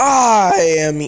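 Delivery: very loud bellow with the voice cracking. Narrating a scene, the speaker voices the character's entrance line; All Might impression, voice cracking. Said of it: "That voice crack".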